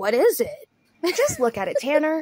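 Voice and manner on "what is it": dim, blank, baffled, clueless voice. Imitating a boyfriend who looks at a fire: imitating a clueless boyfriend. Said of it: "and be like".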